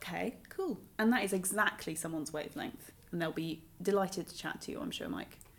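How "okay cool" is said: laid-back, unhurried, easygoing, slow and soft. Describing Mike to listeners, the speaker imitates Mike's chill manner. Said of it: "he's not a guy who talks fast".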